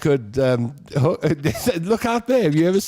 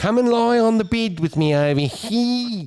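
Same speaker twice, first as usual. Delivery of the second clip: put-on, pitched-up Australian accent with stretched sounds; 7 semitones higher than usual. Speaker imitating how Australians would say it: Australian accent. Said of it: "But the Australians, like".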